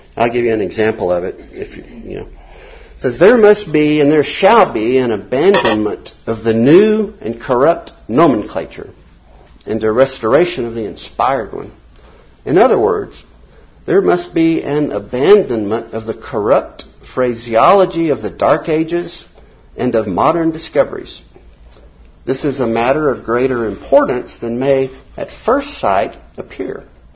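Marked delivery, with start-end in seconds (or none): 3.2-26.9 slow, loud, deliberate reading voice. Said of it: "so I'll read it slowly".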